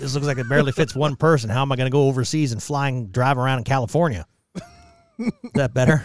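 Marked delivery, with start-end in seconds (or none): 0.0-4.3 put-on, loud, clueless, ignorant-sounding voice. Commenting on a small car with the others, in a put-on ignorant voice. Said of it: "Do I sound more ignorant?".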